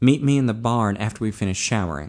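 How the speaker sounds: ordinary delivery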